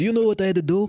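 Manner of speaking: put-on Croatian-accented dad voice.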